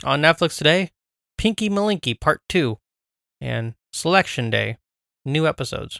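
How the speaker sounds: put-on robot voice, read like a robot. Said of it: "more of my robot voice".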